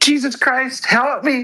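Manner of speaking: acted-out, very high, desperate pleading cry. In an argument, a speaker mockingly repeats the other's outburst, mocking a desperate cry for help. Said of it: "was that a cry for help?".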